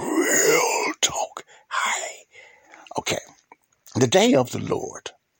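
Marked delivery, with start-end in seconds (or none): 0.0-1.4 put-on mysterious, enigmatic tone. Host says his show's name in his put-on voice: mysterious voice. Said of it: "my mysterious voice".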